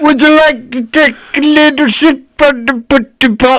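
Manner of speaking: badly done, squeaky high voice. Answering another speaker's request for an impression: bad Bill Cosby impression. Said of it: "Let me hear your Bill Cosby".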